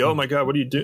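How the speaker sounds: put-on dizzy, hazy man's voice, dazed cry. Retelling a film scene where a man wakes on the table: imitating a dizzy, hazy man. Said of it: "he's all, like, like, dizzy and hazy".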